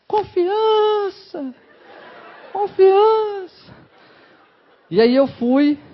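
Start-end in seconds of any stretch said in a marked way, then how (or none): 0.1-3.7 very high, otherworldly, echoing voice like cinema effect. Recalling a first kiss, speaker acts out a voice from beyond, echoing. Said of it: "com a voz com eco e tudo".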